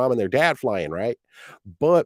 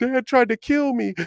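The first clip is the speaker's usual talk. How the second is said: mock terrified, breathless sobbing like a baby bird, higher; 13 semitones higher than usual. Acting out a scared baby eagle gasping back at the nest: imitating a terrified crying eaglet. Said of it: "He's crying. He can't even breathe".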